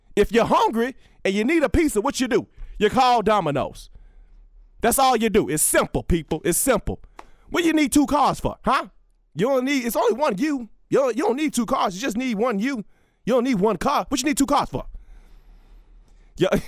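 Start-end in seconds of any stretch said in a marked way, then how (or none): 0.2-14.9 aggressive, pitched-up lecturing rant, hammering every point. Imitating how he talks to people: imitating aggressive Herm Edwards. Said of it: "He's just so aggressive when he talks to people".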